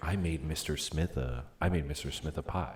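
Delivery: refined, elegant, upscale suburban speech. Showing how people in richer suburbs talk: imitating elegant rich-suburb speech. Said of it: "the elegant version".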